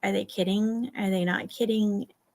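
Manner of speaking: normal talking voice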